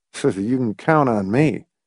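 plain

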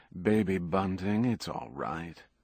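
ordinary delivery

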